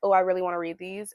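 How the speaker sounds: normal talking voice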